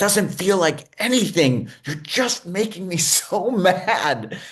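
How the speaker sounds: mock angry outburst. Retelling being asked to describe frustration: imitating someone getting really pissed. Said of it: "he is getting really pissed at me".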